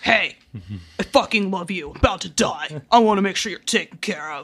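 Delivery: rough, gruff put-on voice. Retelling a show scene to a listener, imitating a gruff voice. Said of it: "It's such a just like gruff".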